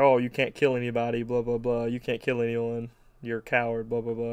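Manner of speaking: normal talking voice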